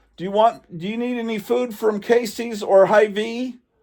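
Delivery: full-on loud, high-pitched yelling. Speaking on the phone into someone's ear, yelling. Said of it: "Sorry to be yelling in your ear".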